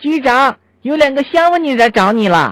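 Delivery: Shanghainese dialect, called out. Retelling a joke where the nanny calls to the bureau chief, retelling a Shanghainese shout. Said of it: "保姆用上海话喊道".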